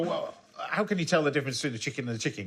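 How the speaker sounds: plain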